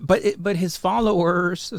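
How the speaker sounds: mocking voice. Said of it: "Dude, why do you do that with your voice?".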